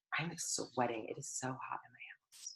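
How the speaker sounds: soft, low, hushed aside.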